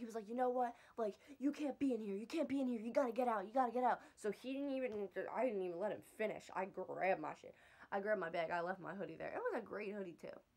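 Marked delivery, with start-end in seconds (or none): 0.3-4.0 put-on furious, angry screaming and yelling. Retelling what a man said during an argument with the speaker, retelling a scream. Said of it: "He starts screaming at me".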